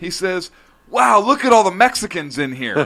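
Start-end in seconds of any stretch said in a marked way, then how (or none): 0.9-2.7 put-on top-of-the-lungs, loud, high child's exclamation. Telling how he looked around on walking into Sears, quoting a loud remark. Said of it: "in a loud voice".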